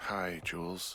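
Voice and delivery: sleepy, drowsy, tired voice, just woken up. Woken by a radio call, the sleeper greets the caller in a sleepy, tired voice. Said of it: "you sound tired".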